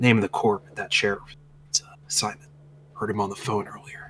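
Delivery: whispered close up. Narrating a man who pulls you aside and speaks in your ear, whispering. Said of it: "he whispers in your ear".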